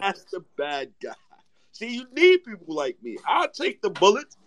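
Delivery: put-on drunken gangster-style delivery, slurred, pitched high. A film scene where the character is drunk; drunken delivery. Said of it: "Remember the part where he was drunk".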